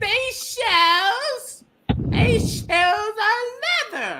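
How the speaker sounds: very high, very slow, strained voice. Describing a man they saw, imitating him straining his voice. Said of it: "he was like straining his voice".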